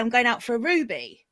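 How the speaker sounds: ordinary delivery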